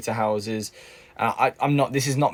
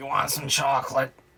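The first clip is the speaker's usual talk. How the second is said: worn-out, dead-sounding, croaky cartoon voice; 4 semitones higher than usual. Comparing her own worn-out voice to a cartoon character, doing the Twiglet from SpongeBob voice. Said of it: "I sound like that um, Twiglet in SpongeBob".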